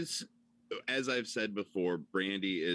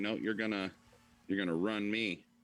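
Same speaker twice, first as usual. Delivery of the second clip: plain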